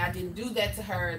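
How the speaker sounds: ordinary delivery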